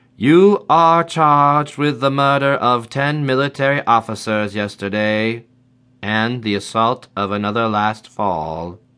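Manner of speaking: flat, even, level, machine-like computer voice. A physical user addresses Citizen William Fay in a flat, even computer-like voice. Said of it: "Her voice was flat and even, like something you would hear from a computer".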